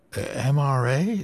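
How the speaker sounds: confused tone. In a hotel lobby, a woman repeats what the young men asked, puzzled. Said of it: "Lillian repeated in a puzzled voice".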